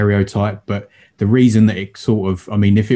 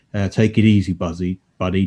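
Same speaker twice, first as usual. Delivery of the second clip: mock deadpan, calming delivery. Retelling a movie moment as a mate calming Rawhide: imitating a deadpan movie line. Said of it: "so funny and weird and deadpan".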